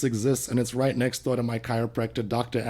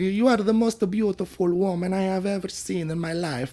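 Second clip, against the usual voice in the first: put-on charming Italian accent, pitched up; 7 semitones higher, 3 dB quieter than usual. Doing accent impressions on request after being asked for Italian: Italian accent. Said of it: "How about Italiano?".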